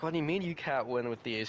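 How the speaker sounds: ordinary talk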